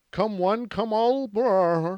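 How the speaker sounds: very slow, high, halting, stumbling speech. Retelling a slip in a speech: imitating him stumbling over words. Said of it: "that's my impression of him".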